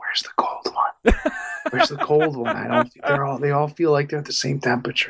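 hushed whisper. Describing a video where a man turns to one of his aides, retelling a whisper. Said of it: "he whispers".

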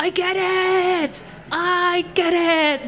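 screaming at full volume, high, slow, drawn-out.

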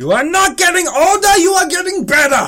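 shrill, high, rising, loud, enthusiastic shout. Retelling a comedy short where compliments are shouted: imitating Steve Carell shouting a compliment. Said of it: "German guys who shout compliments".

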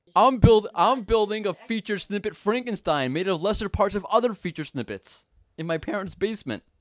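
put-on high-pitched dumb-guy voice. Answering the other speaker's question about the accent, in a put-on moron voice. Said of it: "That's what my moron sounds like".

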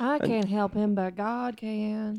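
put-on, fake Southern accent. Voicing a religious person who turns to God: put-on Southern accent. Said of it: "Why does that have to be a Southern accent?".

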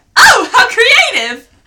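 put-on shrill, high, very loud gushing enthusiasm. Retelling a film scene about graduation caps: enthusiastic Renee imitation. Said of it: "The enthusiasm".

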